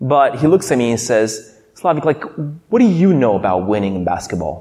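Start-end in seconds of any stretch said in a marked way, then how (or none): 1.7-4.6 put-on anger, dead serious, much lower voice. Speaker retells a friend's reply after their team lost, retelling an angry friend. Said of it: "He was mad".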